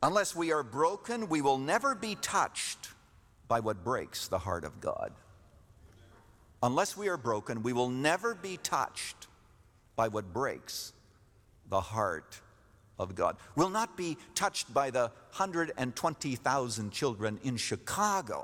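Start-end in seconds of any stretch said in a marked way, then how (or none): 0.0-13.4 slow, measured delivery with pauses between phrases. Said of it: "I need to say this slowly".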